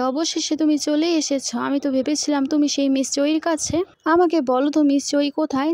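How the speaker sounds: ordinary delivery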